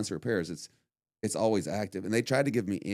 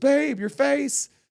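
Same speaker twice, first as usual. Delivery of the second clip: shrill, very high, very loud screaming call; 8 dB louder than usual. Retelling being woken from a nap by his wife: imitating wife screaming. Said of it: "she's screaming".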